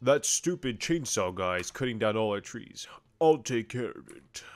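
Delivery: put-on voice like a gorilla. Voicing a character while playing the game, in a gorilla voice. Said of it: "That's like my gorilla voice".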